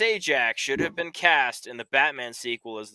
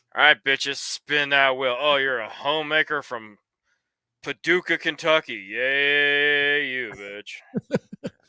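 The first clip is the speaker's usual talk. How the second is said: put-on playing drunk, slower. Imagining showing up at nine a.m. after a long vodka pour, acting drunk. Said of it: "thirty-three second pour in total of vodka".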